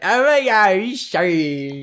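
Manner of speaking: put-on slow, tipsy drunk girl party voice.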